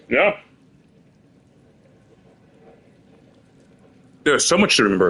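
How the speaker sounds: muffled speech, mouth full of food, chewing. Player reacting to game dialogue while eating, talking with mouth full. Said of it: "I'm literally eating Wingstop right now".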